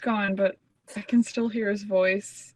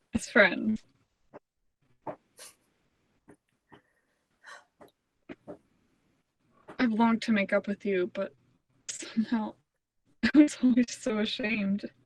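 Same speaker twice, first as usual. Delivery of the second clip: tearful, weeping, crying through the words. Making up with an old rival over a toast, crying while speaking. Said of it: "Why are you crying?".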